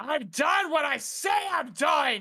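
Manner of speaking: screaming in a changed voice. Narrating a scene, voicing the character as he screams: changed screaming voice. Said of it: "the voice changes as he just screams".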